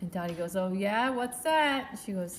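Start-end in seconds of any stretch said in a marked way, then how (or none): 0.5-2.0 put-on Jersey accent, higher, louder, slower. Speaker retells Dottie replying to a young girl's good news, Dottie's Jersey accent. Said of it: "Dottie's like in her Jersey accent".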